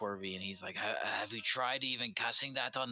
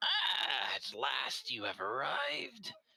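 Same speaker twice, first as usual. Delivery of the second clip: put-on dry, crackly old crone voice, swooping; 3 semitones higher than usual. Narrator voicing a hunched crone peering into a crystal ball, crackling crone voice. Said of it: "her voice crackles like dry weeds".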